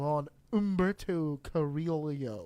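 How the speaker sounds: heavily anglicized Spanish pronunciation. Asking another speaker's thoughts on someone: very anglicized Spanish name. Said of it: "That's the whitest I've ever said a Spanish name".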